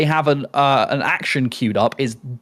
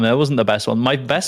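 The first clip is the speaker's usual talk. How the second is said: ordinary delivery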